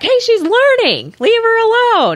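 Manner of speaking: play-acted very high, animated, swooping holler. Retelling a date defending the speaker on a snowboard run: imitating Josh hollering. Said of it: "Josh just hollers back".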